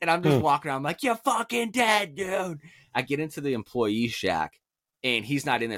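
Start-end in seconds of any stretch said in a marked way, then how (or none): 1.0-2.6 very high, full-throated, threatening scream. Retelling the story, the speaker is re-enacting a full-lung scream. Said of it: "I'm screaming at the top of my lungs".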